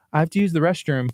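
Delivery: calm, unfussed, even delivery. A father retells his son answering calmly after screaming for him, retelling a calm reply. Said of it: "like in a calm voice".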